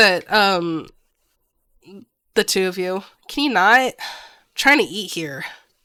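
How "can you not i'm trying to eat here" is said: put-on irritated child voice, louder. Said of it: "he looks very annoyed".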